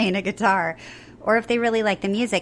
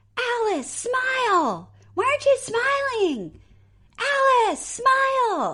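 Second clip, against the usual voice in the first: mock very high swooping screaming, "smile" drawn out. Retelling women below the stage who kept yelling at the speaker: imitating women screaming. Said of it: "they kept screaming".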